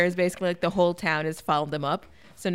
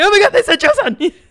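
mock thrilled, excited shout, very high-pitched; 13 dB louder than usual. Retelling what was yelled at parents during a movie: retelling own excited yell. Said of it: "yelled at my parents".

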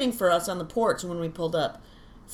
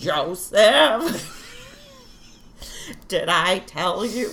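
put-on elderly grandmother voice; 2 semitones higher, 6 dB louder than usual.

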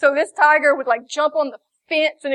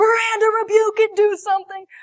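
mock frantic, freaked-out, high, panicked voice; 8 semitones higher than usual. Retelling a late-night phone call about a demon: imitating Derek freaking out. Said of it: "He's freaking out".

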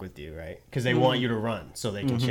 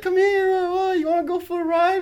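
put-on loud, very high, tipsy drunk voice; 8 dB louder than usual. Retelling police in a car calling to him, imitating drunk-sounding police. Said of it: "they sound drunk".

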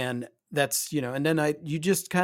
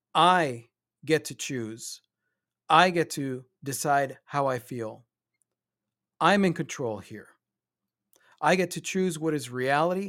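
self-assured, confident, empowered, said out loud. Proclaiming out loud to your stick man, confident, empowered voice. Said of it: "in the most confident, empowered voice".

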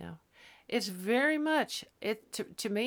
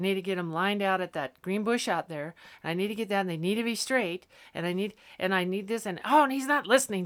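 ordinary talk, nothing marked

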